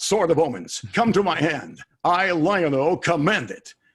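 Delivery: grand, theatrical, loud, slow, high, drawn-out heroic voice. Showing how the line comes out on TV: dramatic Lion-O voice. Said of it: "A little more dramatic".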